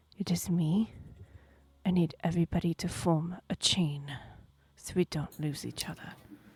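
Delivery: gentle, soft, hushed whisper. Voicing a character who grabs an arm gently: whispering. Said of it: "She grabs your arm very gently and whispers".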